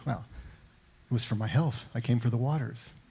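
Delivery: dry, level, expressionless, matter-of-fact deadpan. Retelling a favorite Casablanca scene, quoting Bogie's answer: Bogie-style mock deadpan. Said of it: "in his deadpan way".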